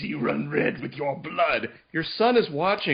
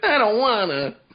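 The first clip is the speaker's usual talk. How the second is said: pitched-up, loud cartoon kid character voice; 5 semitones higher, 6 dB louder than usual. Voicing a character's reply in a book talk: voice like Cartman from South Park. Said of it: "That reminds me of Cartman from South Park, that voice".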